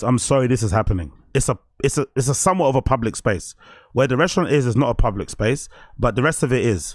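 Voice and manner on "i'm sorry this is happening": plain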